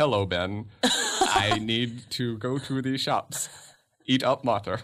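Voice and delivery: mechanical, robotic machine voice reading text. Explaining what a phone without SMS would text back, in a robot voice. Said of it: "it'll just be like a robot".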